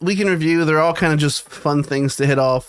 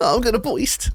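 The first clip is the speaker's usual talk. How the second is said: put-on sexual moan; 7 semitones higher than usual. Joking about how to announce climax during sex: mock moaning during sex. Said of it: "if we were having sex and that's how I told you I was gonna come".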